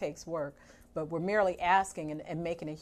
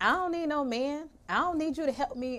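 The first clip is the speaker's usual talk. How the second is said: put-on woman's voice, pitched up; 9 semitones higher, 4 dB louder than usual. Criticizing what some women tell other women, she imitates them: imitating women saying it. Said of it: "I use my best voice".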